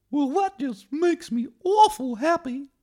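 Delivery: very high, very loud cartoon mouse voice. Acting out the scene where two cartoon characters meet: Mickey Mouse voice. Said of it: "when Eric Cartman met Mickey Mouse".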